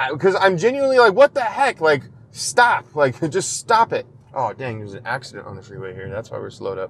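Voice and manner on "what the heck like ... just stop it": slow, high-pitched tone with an almost aggressive edge. Venting while driving, speaking in an aggressive tone. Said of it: "It's almost like aggressive".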